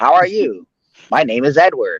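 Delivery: put-on slow, polite customer service voice. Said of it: "it's your customer service voice".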